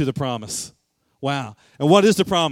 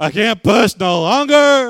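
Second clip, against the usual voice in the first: very slow, loud, high, pained drawn-out wail; 6 semitones higher, 7 dB louder than usual. Retelling a birth where the epidural failed, the speaker quotes the mother: imitating someone screaming. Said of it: "she's screaming".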